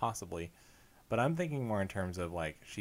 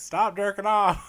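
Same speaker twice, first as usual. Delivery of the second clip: very loud, shrill, high-pitched shout; 12 semitones higher, 13 dB louder than usual. Acting out a grandpa calling from the other room: imitating grandpa yelling. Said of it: "He's yelling at you from the other room".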